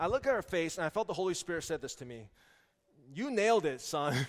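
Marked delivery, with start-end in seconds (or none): 3.1-4.3 slow, dry, sarcastic praise. Retelling a voice heard after walking ahead frustrated: imitating a sarcastic remark. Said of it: "the Holy Spirit is sarcastic with me".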